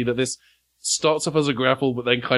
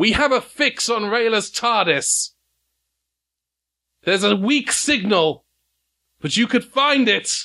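pitched-up yelling; 8 semitones higher than usual. Voicing a cardinal calling after a departing time machine: NPC yelling. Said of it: "he's yelling at you".

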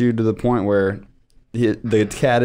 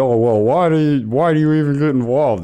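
ridiculous, clueless, silly put-on mocking voice; 4 semitones higher, 3 dB louder than usual. Imitating the other speaker's impression of a caller: mocking clueless voice. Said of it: "You'd make that voice like they don't know".

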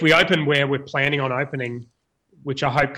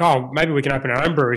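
usual speaking voice

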